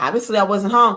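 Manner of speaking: normal talking voice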